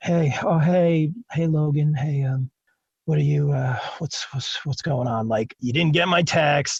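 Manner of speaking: slow, fake drowsy, just-woke-up drawl. Retelling a phone call from his wife: imitating someone acting sleepy. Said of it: "She was trying to be like, all sleepy".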